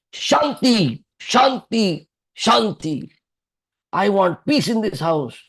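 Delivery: put-on roaring shout. Act out a father of two calling through the house after the office, imitating a roaring call. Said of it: "he will make a roaring call in the house".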